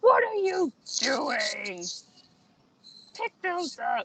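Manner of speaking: high-pitched, drawn-out holler. Voicing a character who yells from the back at a goblin: Garunk yelling. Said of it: "Garunk yells from the back".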